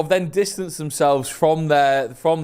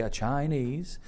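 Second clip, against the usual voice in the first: put-on, copied Chinese pronunciation of a word; 3 semitones lower, 11 dB quieter than usual. Retelling ordering a Chinese, doing an impression of Ethan. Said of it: "that was an impression of Ethan saying a Chinese".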